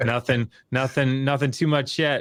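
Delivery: breezy, self-satisfied tone. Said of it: "very smug".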